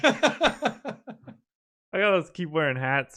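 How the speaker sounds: slow, drawn-out delivery, laughing through the words. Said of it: "I'm sorry that I'm laughing".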